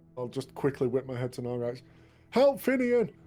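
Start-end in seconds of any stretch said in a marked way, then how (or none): 2.3-3.1 very high, loud, anxious, worried shout. Dueling a foe, calling to an ally for help: worried shout. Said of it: "Worry in my voice".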